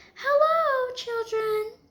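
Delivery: sugary, sweet, very high voice. Reading a story aloud, voicing someone greeting the children in a sweet voice. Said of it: "someone said in a sweet voice".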